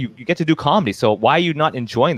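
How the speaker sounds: usual speaking voice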